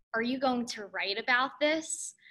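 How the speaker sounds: put-on menacing, threatening whisper. Recounting a professor approaching during a meeting, imitating a menacing whisper. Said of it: "whispering in my ear ... menacingly".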